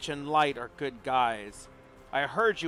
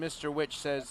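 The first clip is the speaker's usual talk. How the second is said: ordinary delivery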